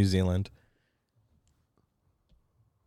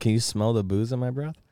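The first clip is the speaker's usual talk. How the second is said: usual speaking voice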